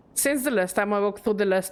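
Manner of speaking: plain reading voice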